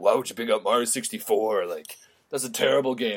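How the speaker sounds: play-acted, disapproving scolding. Retelling a brother's reaction to a picked-out game: imitating a scolding brother. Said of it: "scolded me".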